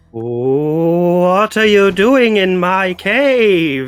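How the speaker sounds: wavering voice trying to sound big. Voicing a character shouting into a cave wall: wavering voice trying to sound big. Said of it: "Flopsy's wavering voice tries to big it up".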